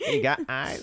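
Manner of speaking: very high squeak, voice breaking at the end. Repeating the impression of the listener starting a set: imitating a friend, voice cracking. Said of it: "The little crack at the end".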